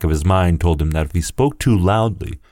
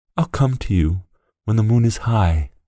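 whispered, much higher; 4 semitones higher than usual. Narrator reads the boy's threat to the man turning into a wolf: whispered. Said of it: "whispered the boy".

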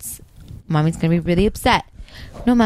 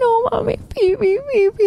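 acted, sobbing, frantic little child, high, hysterical crying. Retelling a daughter begging to pee in the hospital: imitating a child crying hysterically. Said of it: "the hysterical crying that came out of that child".

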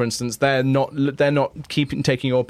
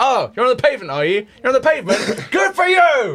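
very high, swooping, mocking, sarcastic scolding tone; 10 semitones higher, 4 dB louder than usual. Imitating a woman telling off a cyclist on the pavement, mock reprimand. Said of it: "she does give them a reprimand".

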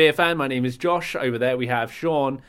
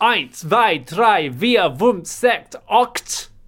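high-pitched, shouted, barked German; 7 semitones higher, 4 dB louder than usual. In an ad sketch, answering when called by name: shouting german numbers. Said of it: "why are you just shouting German numbers at me?".

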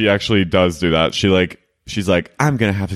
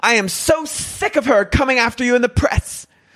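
play-acted, shrill, high-pitched, loud hollering. Describing a lawyer on the show who loves to yell: imitating her yelling. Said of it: "She loves to yell".

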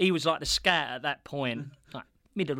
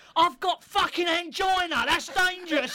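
put-on man's shout. Retelling how a man shouted at someone, retelling a man's shout. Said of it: "he shouts at Big Northern".

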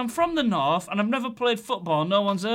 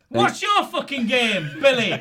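confident, aggressive, confrontational delivery; 4 dB louder than usual. After being told to show more aggression, replying in a scene, more aggressive. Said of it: "a bit more aggression".

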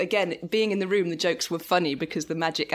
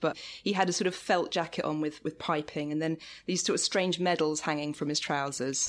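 ordinary talk, nothing marked

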